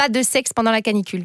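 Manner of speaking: usual speaking voice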